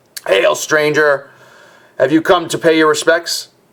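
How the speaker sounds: put-on raspy, rasping old man's voice. Narrator voicing an old man who greets a stranger: raspy voice. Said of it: "says in a raspy voice".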